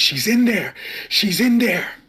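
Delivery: very high, very loud frantic screaming. Voicing a panicked character slamming an anchor into the ground: in-character screaming. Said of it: "I'm just screaming".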